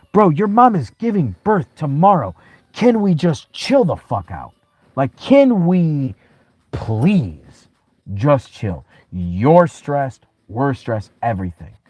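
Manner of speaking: high-pitched screaming. Retelling a fight with a stepson the night before a birth: retelling own screaming. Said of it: "I remember screaming at my stepson and being like".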